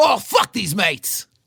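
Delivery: bad put-on Cockney accent. Suggesting a bit to a co-host, trying a really horrible Cockney accent. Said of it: "let's try to do a really horrible Cockney accent".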